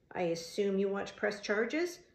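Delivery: ordinary delivery, nothing marked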